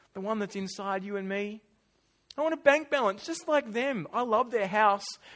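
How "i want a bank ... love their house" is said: loud, whining voice. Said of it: "the whining little Israelite voice".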